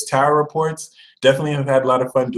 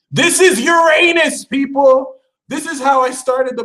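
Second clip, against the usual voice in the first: very high, impassioned, passionate screaming; 12 semitones higher than usual. A speaker addressing an audience, screaming passionately. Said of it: "I'm sorry for the screaming".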